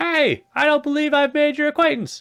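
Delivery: very high, loud, eager, upbeat enthusiastic voice. Voicing the character Beetle introducing himself: enthusiastic Beetle voice. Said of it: "I'll try to be enthusiastic for Beetle".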